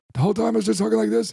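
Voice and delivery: high, rough rasp, rattled off fast. Retelling a show done with a lost voice: Super Dave Osborne voice. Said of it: "I sound like f-, f-, Super Dave Osborne".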